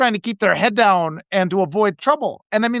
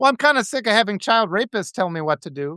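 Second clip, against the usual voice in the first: plain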